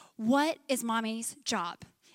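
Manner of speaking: put-on calmest possible patient voice, very slow. Retelling asking the kids a question when they act up: imitating own calmest voice. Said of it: "In the calmest possible voice as possible".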